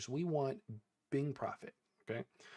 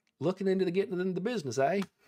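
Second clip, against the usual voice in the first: put-on weird mix of Texan and Australian accent; 5 semitones higher, 5 dB louder than usual. Voicing a farmer answering the player's question, weirdly Texan and Australian accent. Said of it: "came out like weirdly Texan and Australian".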